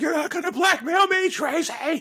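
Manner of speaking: put-on, strained, very high, shrill yell. Recalling a film scene, quote the man trying to be district attorney, imitating a character yelling. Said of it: "What is he yelling".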